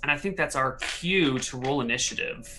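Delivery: ordinary delivery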